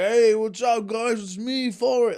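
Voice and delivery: put-on very slow, loud, drawn-out slurred drunk drawl. Mocking a man who sounds drunk, to a laughing room: Lieutenant Dan impression. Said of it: "and I was doing that".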